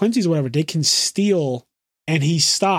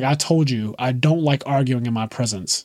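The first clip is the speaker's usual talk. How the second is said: put-on, really deep voice, pitched lower; 4 semitones lower than usual. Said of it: "he has this really deep voice".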